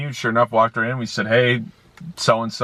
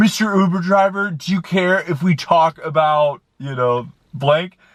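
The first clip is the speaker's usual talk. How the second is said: put-on drunken voice, pitched up; 7 semitones higher than usual. Retelling a passenger leaning up to ask a question, imitating a drunk passenger. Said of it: "in her, like, drunken state".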